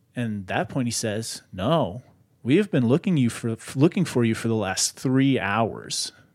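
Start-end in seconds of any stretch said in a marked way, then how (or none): none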